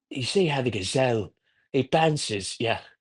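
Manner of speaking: hushed British nature-documentary narrator voice. Imagining someone narrating a man on the stairmaster, in a British nature documentary voice. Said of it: "using like a British uh, nature documentary voice".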